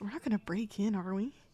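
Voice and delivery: hushed, leaning-in whisper. Voicing a character who leans in to ask another character: whispering. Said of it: "whispers to Loomis".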